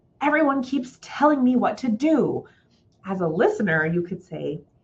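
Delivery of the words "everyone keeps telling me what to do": put-on angry, pitched-up older adult's voice. Giving listeners an example of an older adult speaking, angry voice. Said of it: "says in an angry voice".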